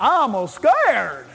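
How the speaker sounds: simple, small backwoods country bumpkin voice. Acting out how someone scared would say it, in a little country bumpkin voice. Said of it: "Sounds like some little country bumpkin".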